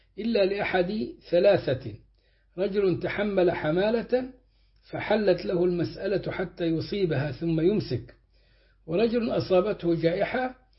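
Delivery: ordinary talk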